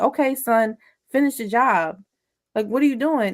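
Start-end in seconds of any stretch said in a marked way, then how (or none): none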